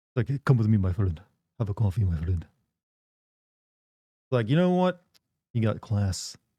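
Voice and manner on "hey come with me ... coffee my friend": put-on accent rolling every R, low voice. Imitating how others say this phrase, put-on accent with rolled r. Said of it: "speaking in their accent... They roll the R".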